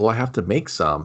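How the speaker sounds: mock sad, let-down, disappointed tone. Retelling a scene, voicing the Q guy told to make more juice, bummed out. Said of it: "he's kind of bummed out".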